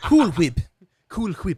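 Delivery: little character voice, high, booming, belted, slow, swooping. Showing the others a little Stewie voice. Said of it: "I could do the little Stewie voice there".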